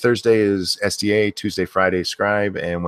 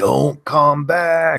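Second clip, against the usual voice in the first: put-on high, little, childlike ice monster voice; 6 semitones higher, 4 dB louder than usual. Retelling how her granddaughter says the movie's ice monster line: imitating the ice monster voice. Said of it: "she does it in that voice".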